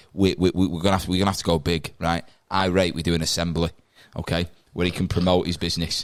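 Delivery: ordinary delivery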